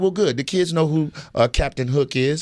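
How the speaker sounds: ordinary talk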